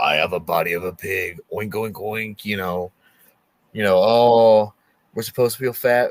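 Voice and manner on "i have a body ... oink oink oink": deep, low, eerie ghostly voice. Retelling an EVP recording session, voicing the audio it picked up, deep ghostly voice. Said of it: "this like deep voice being like".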